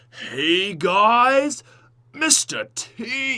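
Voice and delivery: high, very slow, drawn-out commentator voice. Retelling commentating while pretending to be Lex: imitating Lex's intro. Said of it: "the classic old school Lex intro".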